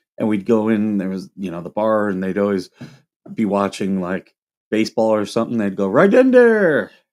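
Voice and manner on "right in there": exaggerated Polish accent, very high and loud. Recalling people at a club bar watching baseball, in an exaggerated accent. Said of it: "I'm exaggerating it".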